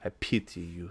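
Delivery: very quiet, hushed, low put-on French accent. Voicing a cat believed to be French, the speaker uses a mock French accent. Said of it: "It's my best French accent".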